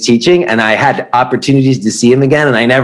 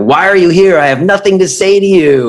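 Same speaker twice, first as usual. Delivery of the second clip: acted, furious, high-pitched angry screaming; 6 semitones higher than usual. Recounting walking in on a man screaming at people in a room: imitating Yuji screaming. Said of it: "he was basically screaming at people".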